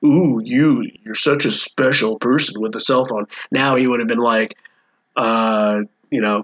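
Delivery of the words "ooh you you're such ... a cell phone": mocking put-on man's voice. Describing how a man once said a phrase, in a mocking impression of a man. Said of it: "he's saying it as like a".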